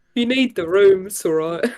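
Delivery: put-on New Zealand accent, friendly. Mocking the old man character's voice: imitating a new zealand accent. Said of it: "Why is this man just from, like, fucking New Zealand?".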